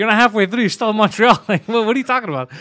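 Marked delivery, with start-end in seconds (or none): 0.0-1.4 loud, incredulous, disbelieving shout. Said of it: "I was like".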